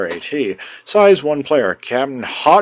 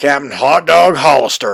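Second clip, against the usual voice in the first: put-on American southern accent; 4 dB louder than usual. Recapping a game, speaker names the captain in a southern accent. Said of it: "I immediately go into a southern accent".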